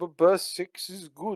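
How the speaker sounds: faint Russian-sounding accent. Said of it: "purposely attempt to put a Russian accent on".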